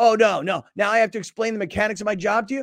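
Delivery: mock-huffy, put-on indignant delivery. Retelling an on-air call before hanging up, imitating Michael getting huffy. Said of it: "Michael starts getting all huffy on me".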